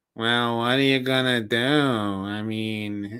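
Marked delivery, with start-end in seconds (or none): 0.2-1.6 put-on Brooklyn accent. Speaker asked about a new york accent, imitating mother's brooklyn accent. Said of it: "if you want me to talk like my mother, who's from Brooklyn".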